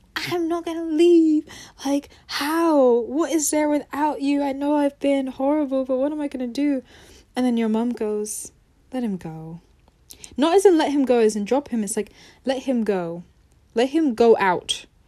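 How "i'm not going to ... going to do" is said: acted-out scream. Retelling how he screamed that he would not leave: retelling his screaming. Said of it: "And he's screaming, like".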